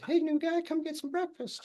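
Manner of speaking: tiny, squeaky little voice, way up high. Retelling a guy in the cells calling him to breakfast, squeaky little voice. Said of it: "just the squeakiest little voice ever".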